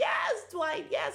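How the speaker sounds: very high, thrilled, excited squealing cheer. Recapping a tv episode, retelling cheering at the tv for someone's entrance, retelling excited screaming. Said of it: "I was screaming at the TV and clapping".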